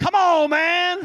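shrill, very loud, high TV sportscaster shout. Pastor recalling a seven-year-old girl with a pacifier, in an ESPN sportscaster voice. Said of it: "To sound like ESPN".

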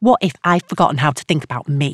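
ordinary delivery

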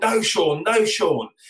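shrill, very high yell, slowly stretched out. Retelling shouting at a player as he got the ball: imitating own past shouting. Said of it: "and I remember shouting".

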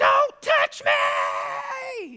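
mock top-of-lungs shriek, shrill and very high. Retelling a homeless lady screaming as they walked into the store: imitating a scream at top of lungs. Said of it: "she screamed at the top of her lungs".

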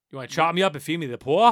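very loud, worst-ever, bad Boston accent. Discussing films with co-hosts, quoting a movie line in a bad Boston accent. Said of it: "One of the worst Boston accents".

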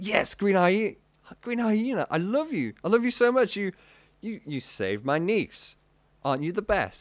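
high, gushing, starstruck adoring fan voice. Showing how everyone greets the hero after a rescue: voicing adoring rescued crowd. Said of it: "And everyone's like".

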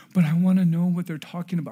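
play-acted, high, loud, rushed crying, pleading daughter voice. Father retelling his daughter's reply about her group text, imitating her crying. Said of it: "And she's crying".

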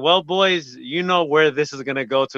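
ordinary talk

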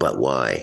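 usual speaking voice

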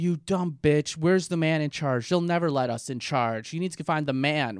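put-on, furious, raging, screamed rant. Retelling a patient screaming at her doctor: imitating a patient screaming. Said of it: "she's screaming at her doctor".

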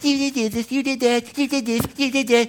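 small, little accusing voice. Acting out the accuser speaking to you, little accusing voice. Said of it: "A little voice".

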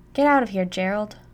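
loud, furious words spat like an angry cat. Reading Mom's line to Gerald, spitting like an angry cat. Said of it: "Mom spits like an angry cat".

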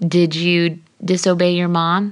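ordinary talk

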